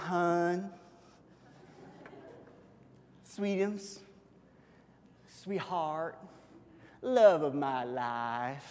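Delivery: soft, slow, sweet, cooing Southern drawl. Retelling Delilah walking in to talk to Samson, Delilah with Southern accent. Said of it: "I always had Delilah pictured as a girl with a Southern accent".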